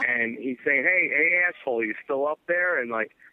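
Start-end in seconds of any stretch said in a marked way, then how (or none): 0.8-2.8 loud, shouted, carrying call. Retelling how a man called up the stairs: imitating someone yelling. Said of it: "he's yelling up the stairs".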